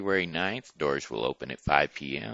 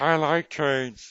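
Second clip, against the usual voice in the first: high falsetto voice; 9 semitones higher, 4 dB louder than usual. Speaking as the son during talk of a train show, high falsetto voice. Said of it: "Why does your son talk in a falsetto voice?".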